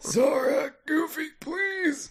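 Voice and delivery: very high, pleading, begging voice. Trying the voice of Donald calling to Sora and Goofy, Donald Duck begging for help, imitated. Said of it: "It really did sound like Donald was, was begging for help".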